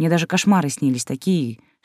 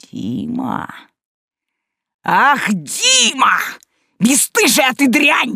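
very high, very slow, shrill bark, rising; 10 semitones higher, 5 dB louder than usual. A father rounds on his daughter and raises his hand again; barked. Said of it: "рявкнул отец".

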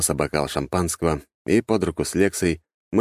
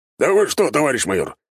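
hurt, offended, sulky, pouting, pitched up; 7 semitones higher, 4 dB louder than usual. A captain protests to the comrade major, offended, sulking. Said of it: "обиженно насупился капитан".

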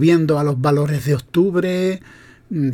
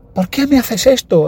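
mock tearful child's crying, much higher; 6 semitones higher, 3 dB louder than usual. Retelling a prank where a child is fooled, imitating a child crying. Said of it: "el niño llorando".

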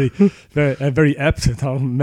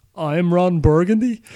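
statement tune rising upward on Burgundy; 4 semitones higher than usual. Show how a teleprompter line with a stray question mark gets read, Ron Burgundy reading it like a question. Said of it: "reads it like a question".

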